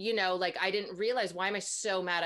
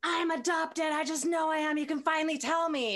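furious outburst, high, angry yell; 9 semitones higher than usual. Retelling yelling at a mother at sixteen: retelling an angry yell. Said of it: "I yelled at my mother once".

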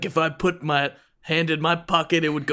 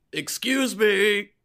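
high, calling-out voice; 5 semitones higher than usual. Player character calling for the owner of the place, yelling. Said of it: "I yell into the room".

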